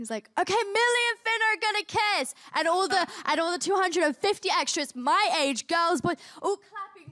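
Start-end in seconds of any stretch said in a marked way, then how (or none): 0.4-2.3 mock, high, blurted announcer-like shout. Retelling how he announced the kiss to everyone on set: imitating him shouting. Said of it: "and he just shouts it".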